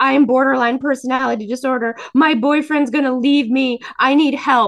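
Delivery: loud, crying, sobbing, falling-apart outburst. Retelling what she once said to a woman offering help, acting out crying and shaking. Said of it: "I'm literally like shaking, crying".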